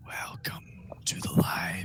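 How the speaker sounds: eerie, breathy whisper of overlapping layered voices. A figure walks up and greets the group, weird voice. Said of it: "in that weird voice says".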